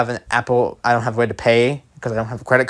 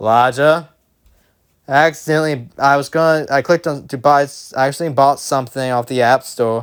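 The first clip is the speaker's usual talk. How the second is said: ordinary talk, nothing marked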